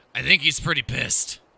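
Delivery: put-on drunken, tipsy, loud stage whisper. Voicing a drunk knight leaning in to share a secret: drunken loud whisper. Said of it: "whispers so each of you can hear. But in his bit of drunken stupor, says it still quite loud".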